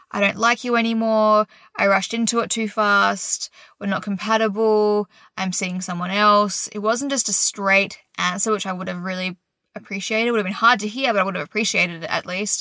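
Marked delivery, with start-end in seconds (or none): none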